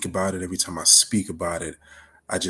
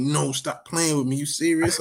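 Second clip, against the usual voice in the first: high, overjoyed, excited, elated scream; 8 semitones higher than usual. Retelling running back into the room to his roommate, retelling an elated scream. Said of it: "I ran back into the room screaming like".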